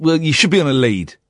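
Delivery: ordinary talk, nothing marked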